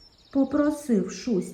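ordinary delivery, nothing marked

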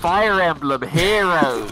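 blaring, very loud, tinny phone-speaker shout. Imitating a game title screamed out of a phone: imitating a shout from a phone speaker. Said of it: "that was a really good out the phone impression".

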